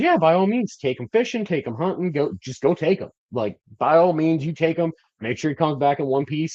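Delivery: light, airy tone.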